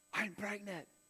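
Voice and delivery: quiet whispered voice. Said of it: "she whispered in my ear".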